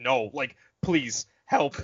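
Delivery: begging, pleading put-on alien voice. Retelling a scene where an alien warns Obi-Wan: imitating a pleading alien. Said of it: "and he's like".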